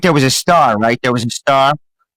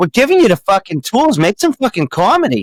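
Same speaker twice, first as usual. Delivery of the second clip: put-on Boston accent, pitched up; 7 semitones higher than usual. Quoting a man scolding the group to make comedy, boston accent. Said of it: "Your Boston accent's spot on".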